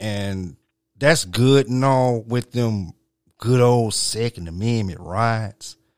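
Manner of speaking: put-on, twangy Southern country accent. Talking with others, the speaker slips into a southern twang. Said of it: "why did you have to use a Southern twang".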